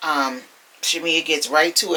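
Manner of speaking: plain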